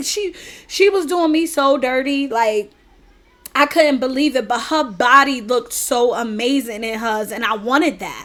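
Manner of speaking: ordinary talk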